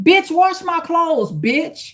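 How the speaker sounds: bossy, belittling tone. Retelling how a relative spoke to her: imitating son talking down to her. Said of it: "He would talk to me like that too".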